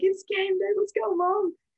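mock pumped-up, high, excited scream. Retelling jumping on Mom's bed on game-day mornings, retelling an excited scream. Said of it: "we would like scream at each other".

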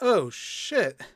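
mock flat, unenthusiastic "oh shit". Imitating a movie line said with no enthusiasm: imitating an unenthusiastic "oh shit". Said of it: "It's so unenthusiastic".

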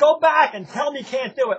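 play-acted, shrill, very high screaming. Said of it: "she screams at me".

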